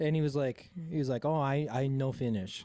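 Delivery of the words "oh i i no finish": slow, halting broken English. Retelling a comedy bit, answering a waitress: imitating broken English reply. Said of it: "speak proper English back".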